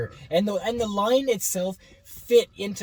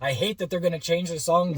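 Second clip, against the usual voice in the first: ordinary talk, nothing marked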